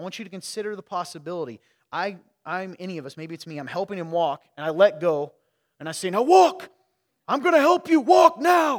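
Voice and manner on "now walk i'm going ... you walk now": very loud, shrill, high-pitched yell. Picturing themself helping their godson walk, retelling their own yell. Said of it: "Why are you yelling at him?".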